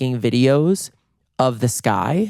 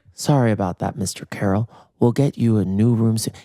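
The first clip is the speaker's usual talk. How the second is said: listless, flat, low-energy monotone; 3 semitones lower than usual. Retelling the receptionist's reply to two screaming guests: imitating a low-energy receptionist. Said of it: "He is so low energy".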